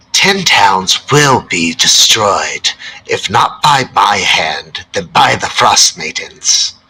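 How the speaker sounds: loud, shrieked screaming voice. Voicing a sudden voice that screams back at the players: screaming voice. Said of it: "a voice scream at you back".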